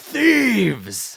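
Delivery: loud, high-pitched snarling dragon voice, spitting the word. Voicing a dragon who spots thieves by the gold: snarling dragon.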